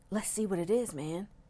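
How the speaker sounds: whispering. Reading a story, a boy grabs his friend's hand beside the car: whisper. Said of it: "he whispered".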